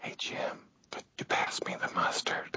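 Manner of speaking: very soft, creepy whisper, barely voiced at all. Showing how any whispered request sounds, whispering. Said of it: "if you whisper anything".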